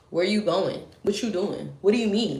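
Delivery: put-on bossy, demanding voice. Recalling being bossy with people who still lied, mock-bossy questioning. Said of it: "I was really bossy".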